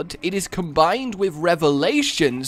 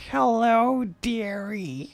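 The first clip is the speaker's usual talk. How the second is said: classic fairy-tale witch crone voice; 3 semitones higher, 4 dB quieter than usual. Showing how hard it is to sound like a witch: classic crone voice. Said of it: "you know that classic crone".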